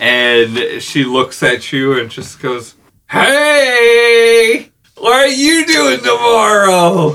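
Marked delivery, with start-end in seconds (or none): 3.1-7.1 put-on slightly drunk, very high-pitched, slow and drawn-out. Speaker plays a woman who bumps into the listeners, acting a little tipsy. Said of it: "she's a little staggered already for the night".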